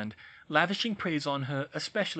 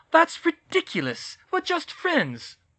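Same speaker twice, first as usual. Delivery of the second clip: very high, loud, swooping protesting outcry; 13 semitones higher, 6 dB louder than usual. A young woman answers her roommate about a news report, crying out in protest. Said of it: "Hermione cried, lapsing into English".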